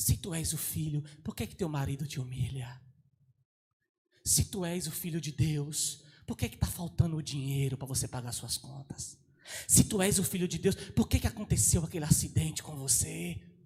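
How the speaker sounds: ugly, low put-on devil voice. Speaker voices what the devil says to the listener, in an ugly devil voice. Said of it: "Olha a voz do diabo, ó. É muito mais feia do que a minha".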